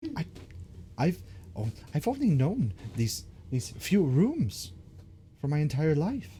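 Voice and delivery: high, put-on little rat creature voice. A rat in the story answers the players' question, in a rat character voice. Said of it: "The rat stops and turns around slowly. / He looks at you expectantly".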